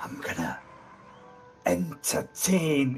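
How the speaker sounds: quiet put-on voice. Voicing Giles turning back to the players: Giles speaking quietly. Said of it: "he turns back quietly and says".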